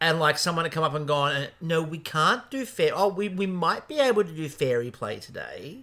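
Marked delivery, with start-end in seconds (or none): 1.6-5.8 mock teacher's sarcasm, thickly laid on. Imagining an early education teacher talking to a kid: imitating a sarcastic teacher. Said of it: "who was being very sarcastic".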